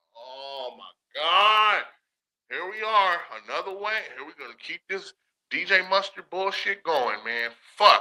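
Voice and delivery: put-on exasperated, angry outburst of disgust. Retelling his reaction when the beat broke down: retelling his own mad reaction. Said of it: "the reason why I get so mad".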